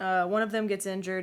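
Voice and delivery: normal talking voice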